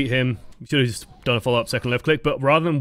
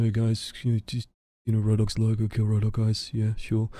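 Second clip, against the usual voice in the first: half-swallowed mumble, close to the microphone; 3 semitones lower, 4 dB quieter than usual. Imitating someone sending unclear messages over the microphone: mumbled close to the microphone. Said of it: "they're just sort of mumbling into the microphone".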